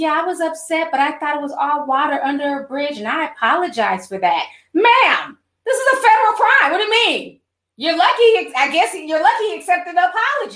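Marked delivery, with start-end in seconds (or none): 0.0-4.5 sweet, gentle, apologetic voice. Retelling an apology that is called gaslighting, imitating Karen Civil's sweet voice. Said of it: "the sweet voice".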